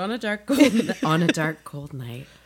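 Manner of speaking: creepy, spooky storyteller narrator voice. A podcast host says the show's title in the podcast narrator voice. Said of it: "There's the narrator voice".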